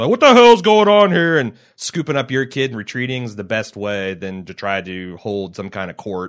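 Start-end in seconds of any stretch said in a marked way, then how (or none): 0.1-1.4 very loud, high, stern dad voice, yelling. Describing breaking up trouble between kids: stern dad voice. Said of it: "rolling in with the dad voice".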